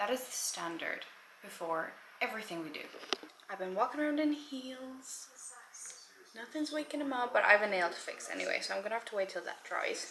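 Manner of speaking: very quiet, hushed talking. Talking to viewers quietly because someone fell asleep, talking really quietly. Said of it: "I'm talking really quietly because John fell asleep".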